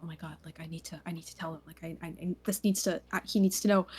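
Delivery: low muttering mumbled under the breath. Voicing a character who gets out of bed after news: muttering to herself. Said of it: "she's sort of muttering".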